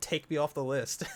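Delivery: barked-out yell, sick of it. Retelling finally answering a company's repeated calls, retelling a yell. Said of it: "I just yelled".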